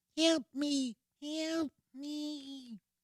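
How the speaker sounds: very high, tiny fly voice, crying and pleading.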